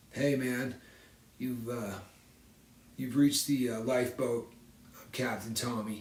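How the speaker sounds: slumped, low, listless, beaten-down murmur. Showing an audience how posture changes attitude: slouched, unexcited voice. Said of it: "sit like this and just start talking like this".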